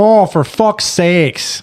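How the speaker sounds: put-on Midwestern accent. Imitating how a man would say it in his own midwest dialect: put-on midwest accent. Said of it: "what I envision him would say in his own".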